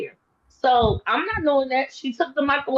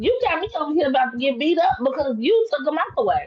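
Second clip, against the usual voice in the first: mock, mildly sarcastic jabbing tone. Retelling what was said to the rail manager: retelling a sarcastic remark. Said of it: "I said it kind of sarcastically".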